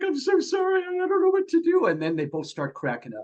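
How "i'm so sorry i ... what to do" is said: mock, very high, tearful blubbering sob. Retelling how a woman started crying over a refused bottle, imitating someone crying. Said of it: "she starts crying and blubbering".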